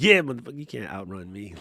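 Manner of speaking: triumphant, victorious, gloating, taunting tone. Retelling winning against someone in traffic: retelling a triumphant celebration.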